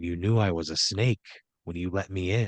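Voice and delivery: close, intimate half-whisper right at the ear. Narrating a story to a listener, the attacker leans close, half-whispered in the ear. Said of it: "he leans in close and he whispers in your ear".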